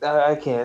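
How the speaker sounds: fake teary, weepy crying voice. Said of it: "I'm tearing up, guys".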